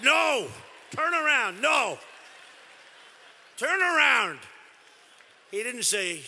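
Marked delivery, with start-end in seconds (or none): 0.0-4.4 slow, drawn-out, stretched bellowed shout. Retelling how someone in the room answered: imitating a shouted reply. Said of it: "the guy shouts back".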